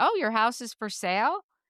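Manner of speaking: ordinary talk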